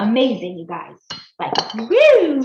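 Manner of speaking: loud, swooping, bubbling excited gush. Addressing viewers during a recipe demo, excited. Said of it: "Sorry, I'm all excited".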